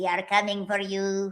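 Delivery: hushed, soft, little gnome voice. Reading out a listener's comment on the podcast, in a gnome voice. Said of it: "That was my gnome voice".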